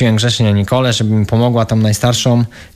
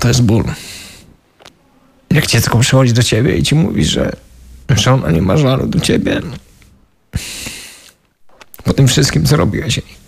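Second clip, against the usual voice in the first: tearful, crying while speaking. Recalling what a child told the speaker after getting sober, speaking while crying. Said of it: "Czemu ty to płaczesz?".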